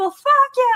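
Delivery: very high, high-pitched screaming. Retelling a shouting match seen in Parliament: imitating someone screaming. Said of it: "screaming at each other".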